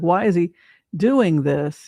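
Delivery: ordinary talk, nothing marked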